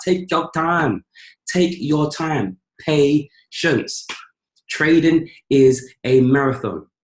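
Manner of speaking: very slow, deliberate, every word weighted. Urging patience in trading, speaking slowly. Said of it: "I say it slowly".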